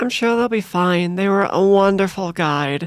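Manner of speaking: dripping, laid-on, heaviest possible sarcasm. Remarking on a guide who just left: heaviest sarcasm possible. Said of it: "I say with the most sarcasm possible".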